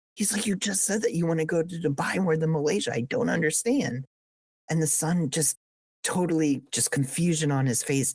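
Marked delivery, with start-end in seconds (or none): 0.5-4.1 furious, really heated angry outburst. Retelling a joke where the dad gets super angry: imitating an angry dad. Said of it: "He's super angry".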